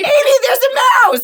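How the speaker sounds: high, loud, panicked scream.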